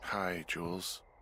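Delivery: weary, tired, sleepy, just-woken voice. Called out of bed to the radio, a character greets Jules: tired voice. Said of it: "you sound tired".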